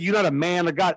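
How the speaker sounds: ordinary delivery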